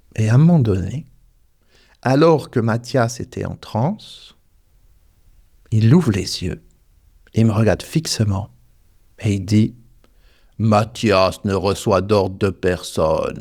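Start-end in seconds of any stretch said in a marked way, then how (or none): 10.6-13.4 big, deep voice, slow pace. Retelling Mathias opening his eyes in a trance and staring at the speaker; imitating Mathias's big voice. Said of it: "Avec une grosse voix".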